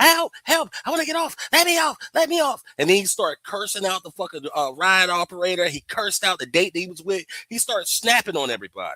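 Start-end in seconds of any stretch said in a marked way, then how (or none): 0.0-2.6 screaming very loudly, very high, shrill, high-pitched. Retelling a time on a Ferris wheel: imitating Floyd screaming. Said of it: "he was screaming his ass off".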